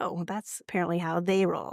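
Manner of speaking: usual speaking voice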